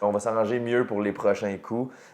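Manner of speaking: usual speaking voice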